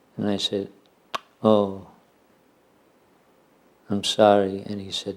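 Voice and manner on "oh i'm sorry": put-on insincere, mock-sincere "sorry", slower. Retelling your own past apology to him over breakfast, an insincere apology. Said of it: "did an imitation of my insincerity... with the sarcasms".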